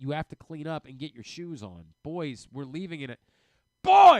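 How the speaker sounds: very loud yelling. Retelling calling the boys to get ready to go: imitating yelling at the kids. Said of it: "Why are you yelling at the kids".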